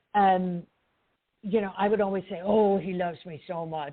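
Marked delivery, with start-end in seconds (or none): 2.4-3.9 cute, put-on talking cat voice. Recalling what I'd always say about my cat, in my talking cat voice. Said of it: "that's my talking cat voice".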